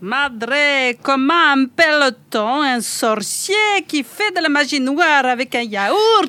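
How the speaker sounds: French spoken in a put-on Italian accent. Host draws a card and tells a joke to the columnists, Italian accent. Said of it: "Un accent italien".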